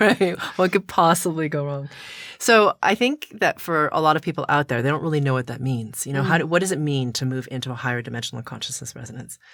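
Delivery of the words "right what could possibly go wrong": laughing while speaking. Repeating the other speaker's remark: laughing.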